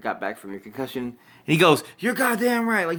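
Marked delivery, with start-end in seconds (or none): 2.0-2.9 very high-pitched, fired-up, amped-up exclamation. Retelling a wrestler's interview reply, imitating someone amped up. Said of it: "he's so amped right now".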